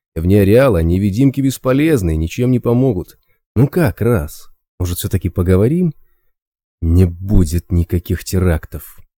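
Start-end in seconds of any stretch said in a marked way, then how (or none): 6.8-9.0 quietly angry, slower pace. A character answers an offer to talk, quietly angry. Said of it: "Раз тихо злился".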